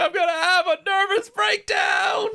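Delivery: fake almost-crying voice, very high-pitched. Describing a film scene, imitating Walter Matthau's put-on crying voice. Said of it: "he puts on, like, a almost, like, crying voice".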